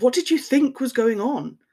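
bewildered. Stunned after her shrill reply, he asks her back, baffled. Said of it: "He said in bafflement".

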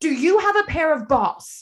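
put-on hardcore, very thick New York mob-movie accent. Recalling what a man from new york said in his office, thick new york accent. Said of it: "he had this very thick accent".

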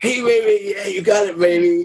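seventies pimp voice. Describing a scene's energy thing to a co-host, voicing it as a 1970s pimp. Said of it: "Satan is a 1970s pimp".

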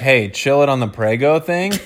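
ordinary talk

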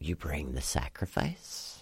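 cackling delivery. Game narrator voicing a woman whose voice echoes through the woods, in a cackling voice. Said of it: "cackling, and she's like".

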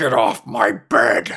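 put-on grumpy, disgruntled old man voice, growling. Pitching a movie line, the speaker voices a disgruntled older fellow growling. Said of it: "a disgruntled older fellow growls".

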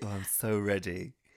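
dry, slow, drawn-out sarcastic tone. Repeating the other speaker's reply back at them: imitating a sarcastic reply. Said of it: "stop being sarcastic".

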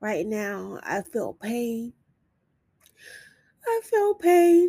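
fighting back tears. Talking about being worthy of a life without pain, admitting pain now, holding back tears. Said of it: "I'm trying not to cry".

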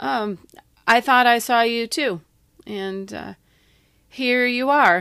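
slow, forced, strained nonchalance. Answering a young man, the narrator tries to sound nonchalant. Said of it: "trying my best to sound nonchalant".

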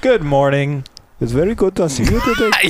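polite, high-pitched put-on Indian accent. Acting out a woman's morning greeting, in an imitated indian accent. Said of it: "I can't think of how to do an Indian accent right now".

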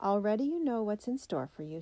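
ordinary delivery

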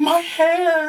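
woman's voice, pitched very high. Narrating a game scene, voices heard from the bathroom: woman's voice. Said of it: "the voice of a woman going".

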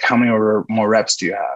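ordinary delivery

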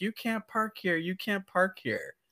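put-on very high, animated, swooping shouting. Retelling a guy yelling over a closed parking spot, imitating a guy yelling. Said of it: "the guy started yelling at me".

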